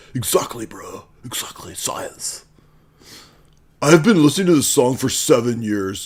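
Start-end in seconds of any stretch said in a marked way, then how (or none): 3.8-6.1 goofy, dorky dumb nerd voice. Reading out online comments to mock them: dumb nerd voice. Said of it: "dumb nerd voice".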